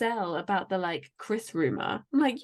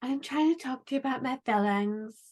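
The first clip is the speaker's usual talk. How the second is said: put-on cutesy baby-talk voice. Retelling how someone spoke to her, in a mock baby voice. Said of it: "I hate that like baby voice".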